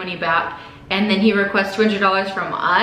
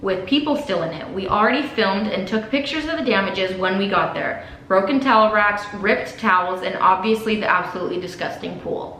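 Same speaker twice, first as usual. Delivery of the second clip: ordinary delivery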